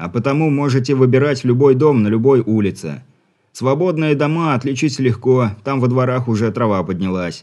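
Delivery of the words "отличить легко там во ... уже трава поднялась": ordinary delivery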